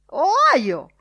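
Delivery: shrill, very loud, screeching croak, Ohio drawn out. The editor cries out again, with a shrill croak. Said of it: "Gracchiò il direttore con voce stridula".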